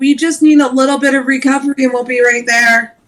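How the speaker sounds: calling out loudly, shouting. A player's slashed-up mage calls out to the group: yelling. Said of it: "I'm gonna yell".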